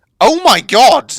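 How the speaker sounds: very loud, high-pitched shouted yell. Speaker discovers something unexpected while showing viewers their kingdom, yelling. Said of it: "I'm sorry for yelling that".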